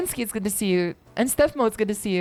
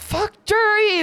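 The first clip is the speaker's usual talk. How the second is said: very high, shrill, angry scream, held long; 11 semitones higher than usual. Retelling how a man stood up from his seat and screamed: retelling a loud scream. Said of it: "then he yells".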